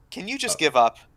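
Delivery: plain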